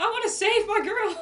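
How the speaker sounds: yelling at full volume. A player voices their character getting up after being knocked over, screaming. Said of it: "I'm standing up and I'm screaming".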